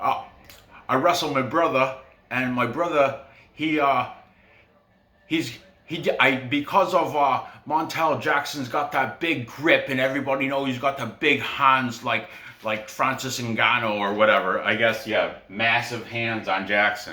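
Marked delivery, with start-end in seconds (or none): 0.0-14.6 put-on Cockney accent with a dip-in-mouth sound. Imitating a fighter from an interview in a Cockney accent: Brett Johns Cockney accent. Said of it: "he's got that Cockney accent where he's like this".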